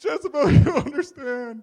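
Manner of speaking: very loud, high, whiny sobbing wail. Retelling the vineyard story, the speaker acts out a man's words to jezebel, mock crying. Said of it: "You can almost imagine that he's crying".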